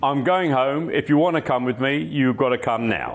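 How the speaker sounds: mock sulky, grumpy huffing outburst. Retelling how the son left after a bad golf game: imitating a sulky huff. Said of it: "got the right hump and wouldn't wait".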